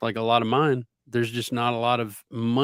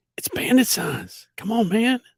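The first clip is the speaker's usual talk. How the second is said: very high, swooping politician voice; 10 semitones higher than usual. Working on a new bit, a speaker does a Joe Biden impression. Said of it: "I'm trying to get this Joe Biden thing down where I talk real loud".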